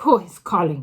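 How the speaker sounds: abrupt, sharp, very loud snapping retort. Reading a story aloud, the Grand High Witch demands who calls: snapping. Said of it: "snapped the Grand High Witch".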